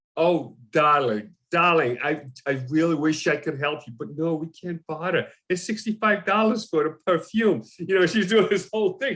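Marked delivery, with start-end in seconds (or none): 0.2-7.7 put-on older New York woman impression.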